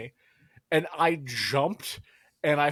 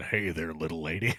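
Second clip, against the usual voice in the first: put-on man voice, much lower, quieter; 9 semitones lower, 4 dB quieter than usual. Retelling a woman's greeting after she patted the speaker, in her best put-on man voice. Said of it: "she did it in her best man voice".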